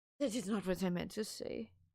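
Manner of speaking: put-on Russian accent. Trying out a line from a short-story idea; put-on Russian accent. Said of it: "How is my Russian accent?".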